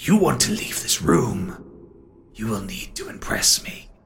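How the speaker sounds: bone-chilling, disembodied voice coming from all around. Voicing an unseen presence speaking to those who disturbed it, chilling disembodied voice. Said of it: "you feel a chill through to your bones".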